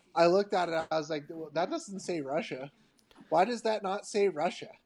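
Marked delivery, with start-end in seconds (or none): none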